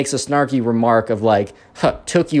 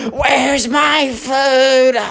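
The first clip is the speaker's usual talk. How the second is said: very high-pitched, whimpering, whining wail; 12 semitones higher than usual. Retelling a customer flailing in her chair, imitating Karen whining and screaming. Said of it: "whimpering and whining and screaming the entire time".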